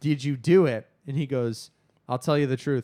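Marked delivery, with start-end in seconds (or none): 0.0-0.9 flat, level delivery, a bit loud. Recapping a movie scene, retelling one character's question to another: retelling a flat question. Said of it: "K like flatly asks him like".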